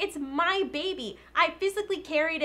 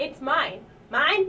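squawky seagull cry on each word; 3 dB louder than usual. In a sketch, pleading to keep control of a show: squawking like a seagull. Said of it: "now you just sound like a seagull".

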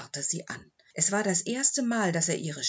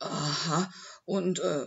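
plain reading voice

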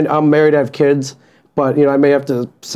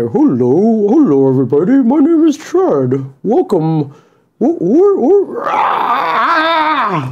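high, slow, swooping puppet voice, "ah" stretched; 8 semitones higher than usual. Wearing a piranha plant puppet, asked to give its voice: Chad the puppet's voice. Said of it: "put on Chad and give us Chad's voice".

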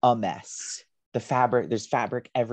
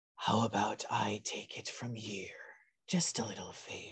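quiet whisper up close; 11 dB quieter than usual. As Dern, whispering into the player character's ear, whispering. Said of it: "you hear Dern once again whisper in your ear".

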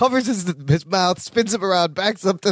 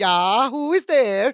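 little, slow, fake Swedish accent; 4 semitones higher than usual. Retelling a scene where a character masks his voice, little Swedish voice. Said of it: "Larry does a little Swedish voice".

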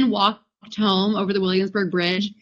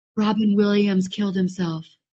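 mock whisper, hushed and close. Retelling what an ex whispered in the speaker's ear at a movie: imitating a whisper. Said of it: "He whispered in my ear".

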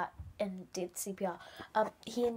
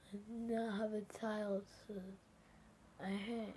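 mock slurred voice, quieter; 11 dB quieter than usual. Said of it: "but he talked like".

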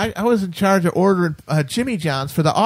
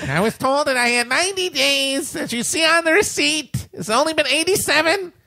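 high, whining voice; 7 semitones higher than usual. Describing a high-pitched tone as someone returning something to Best Buy, imitating a whining customer. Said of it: "It's the whining keen of someone trying to return something to Best Buy".

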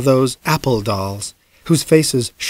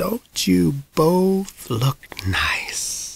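soft, tremulous, palsied voice; 4 semitones higher, 6 dB quieter than usual. Narrator voicing the old lady speaking to Mom, in a palsied voice. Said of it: "she said in her palsied voice".

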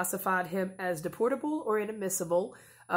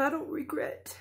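high, tearful, choked-up voice while crying. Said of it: "I can't even say it without crying".

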